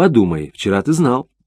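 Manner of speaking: ordinary delivery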